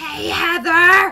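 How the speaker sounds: voice all but gone. Retelling a sister's greeting after she lost her voice: imitating someone with no voice. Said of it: "she had, like, no voice".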